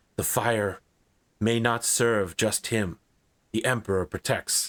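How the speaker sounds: hushed whisper in a character voice. Narrating a voice whispering in the listener's ear, Sister Dawn Latenya whispering. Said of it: "you hear her whisper".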